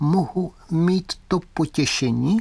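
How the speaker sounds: thin, high, slow wind-up doll voice. Narrator voicing Fritz after the old man presses his coat button, Fritz's thin voice. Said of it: "tenkým hlasem, který, jak se zdálo, vznikal někde vzadu hlavy".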